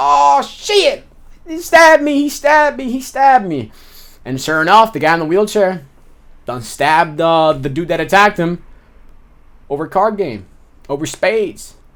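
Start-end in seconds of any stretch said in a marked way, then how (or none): 0.0-3.7 mock very high, stretched-out, drawn-out screams. Retelling a prison fight, imitating a stabbed man screaming. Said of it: "the guy's screaming".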